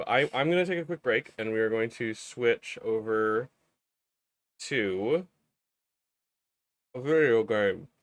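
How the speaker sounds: talking with mouth full. Host announcing a break to switch to a video game, talking while eating a popsicle. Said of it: "I'm still eating my popsicle".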